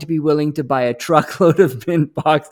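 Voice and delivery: speaking through laughter.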